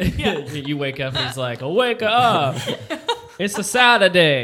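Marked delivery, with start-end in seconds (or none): 1.6-4.4 put-on clumsy, awful Italian accent, loud and drawn out. Acting out an italian dude waking you up on a saturday: bad italian accent. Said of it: "That's the worst Italian accent".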